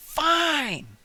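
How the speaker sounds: very loud, very high, stretched-out annoyed "fine". Retelling a reply to a pizza plan, mock annoyed "fine". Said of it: "we'll even say that with that tone".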